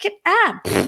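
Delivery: high, careless, mock-casual dismissive voice.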